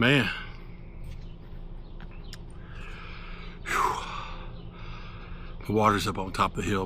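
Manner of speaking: winded, breathy, hushed half-whisper, panting. Speaker pauses before heading up the hill to the water, talking out of breath. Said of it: "after I catch my breath right now".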